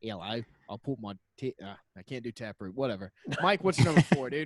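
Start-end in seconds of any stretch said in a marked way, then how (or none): 0.0-1.5 fake, put-on Australian accent. Speaker tries out an australian accent mid-conversation: fake australian accent. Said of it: "Let me get my Australian accent".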